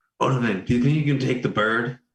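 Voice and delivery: put-on whispering. Whispering in character to odovan about taking the bird: whispering in character. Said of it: "can I whisper to Odovan?".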